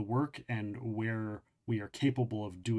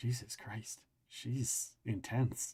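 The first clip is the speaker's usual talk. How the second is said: nervous, hushed whisper, breathy and soft; 6 dB quieter than usual. Retelling Nick's remark, whispered because he feared she might hear, whispering. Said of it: "Nick whispers".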